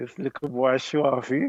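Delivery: imitated muttering under the breath. Retelling an earlier conversation with a son: imitating muttering under breath. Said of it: "I said under my breath".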